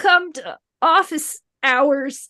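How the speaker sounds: sad, slow, tinny robot voice. Voicing a smashed robot letting out a sad line: tinny robotic voice. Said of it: "a kind of tinny robotic voice".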